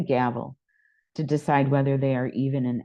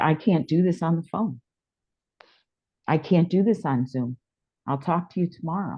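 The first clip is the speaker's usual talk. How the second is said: mock emotional, overwhelmed, dismissive, upset outburst; 4 semitones higher than usual. Retelling what the upset executive director said: imitating someone getting emotional. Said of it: "And she got emotional".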